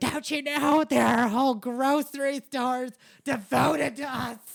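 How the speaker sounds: shrill, full-volume ranting yell. Retelling a customer's rant at the boss: imitating a customer yelling. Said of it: "yelling at my boss. She's like".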